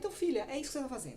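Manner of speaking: fast, rattled-off, surprised delivery.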